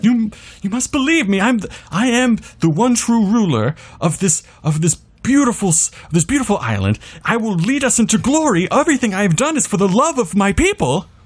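shrill, very high screaming. Voicing a character who screams at everybody, pleading for belief: screaming in character. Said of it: "Allison is just starting to scream at everybody".

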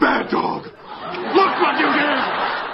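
deep growling voice. Imitating a character's line in a deep growl. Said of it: "his voice goes really deep".

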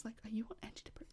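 hushed, quiet whisper. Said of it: "whisper, whisper".

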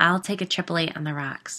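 usual speaking voice

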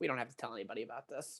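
mock, very quiet, low, bone-dry deadpan. Retelling what the woman beside them on the ride said, imitating her very dry style. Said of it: "in her very dry style goes".

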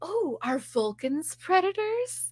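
mock thrilled eager voice. Retelling a Star Trek scene, imitating an excited character. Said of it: "so into it".

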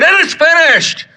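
loud triumphant cry, pitched very high. Speaker reenacting words he once said aloud, retelling a loud triumphant cry.

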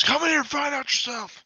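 bellowing at full lung power, very high and shrill. Voicing Ugluk challenging those outside: yelling at the top of his lungs. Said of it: "yell at the top of his lungs".

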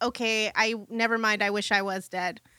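ordinary talk, nothing marked

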